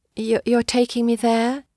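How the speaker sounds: soft, quiet murmur. Edna, in a carriage, asks Harold a question, murmuring. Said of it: "she murmured".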